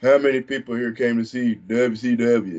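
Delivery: mocking, taunting delivery. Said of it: "kinda mocking the Southern".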